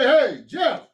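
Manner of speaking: high voice calling out across a distance. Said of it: "You know, you can hear me".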